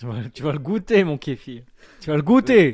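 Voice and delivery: insistent loud voice.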